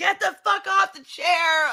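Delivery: acted, full, high-pitched scream. Retelling someone pulling a chair away: imitating someone screaming. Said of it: "pulling the chair away and screaming".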